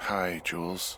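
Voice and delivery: drowsy, tired, sleepy just-woken voice. Woken up and called on the radio, greeting the caller: tired, sleepy. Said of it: "you sound tired".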